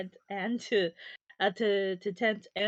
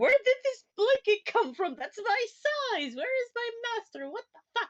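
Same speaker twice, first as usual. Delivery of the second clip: bewildered bird voice, higher; 14 semitones higher than usual. Voicing a bird that wakes up in a strange bed: confused bird voice. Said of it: "poor bird's gonna wake up and be so confused".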